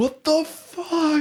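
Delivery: shrieking, very high screamed outburst. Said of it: "I screamed at".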